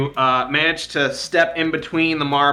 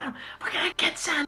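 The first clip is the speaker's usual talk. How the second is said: put-on cheerful whisper, much higher pitch; 9 dB quieter than usual. Acting out the kids' whispered plotting, retelling cheerful whispering. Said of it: "cheerful whispering".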